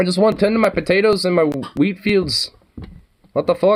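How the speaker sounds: put-on light, slight Irish accent, pitched very high. Imitating tired folks fed up with conflict: a little Irish accent. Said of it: "starting to get a little Irish accent".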